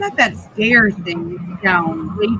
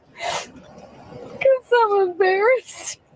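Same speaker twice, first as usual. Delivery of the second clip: very high-pitched, tearful, crying speech; 12 semitones higher than usual. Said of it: "What are you crying for?".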